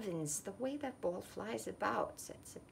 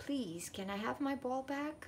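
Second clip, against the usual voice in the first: high, earnest, polite, pleading voice; 5 semitones higher than usual. Christopher speaks to the red currant girl after his ball lands in her bushes: pleading. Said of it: "pleaded Christopher".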